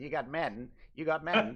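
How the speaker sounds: slow, drawling put-on American accent. Imitating how the game gets talked about in America: American accent. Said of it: "American accent".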